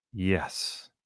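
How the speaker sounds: low, soft, distinct tone. Showing how to give an anchor word: lower distinct tone. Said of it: "say in a, in a lower tone, a distinct tone".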